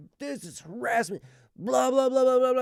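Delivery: very high, loud, furious screaming tirade. Retelling how an angry lady laid into them: imitating an angry lady yelling. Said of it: "yelling and screaming and swearing".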